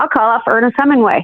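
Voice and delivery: ordinary delivery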